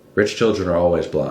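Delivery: ordinary delivery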